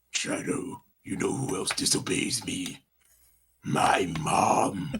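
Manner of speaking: low, deep, gravelly evil voice. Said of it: "He talked to a gravelly voice".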